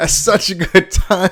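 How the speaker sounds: high, loud voice crack like puberty. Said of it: "It changed my voice. I'm going through puberty again".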